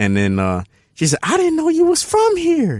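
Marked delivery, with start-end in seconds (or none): 1.2-2.8 woman's voice, way up high. Retelling what a woman said to him after recognizing him, imitating a woman's voice. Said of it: "the way you making her voice sound".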